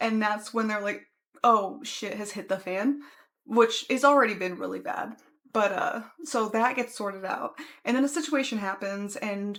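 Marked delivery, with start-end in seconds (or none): none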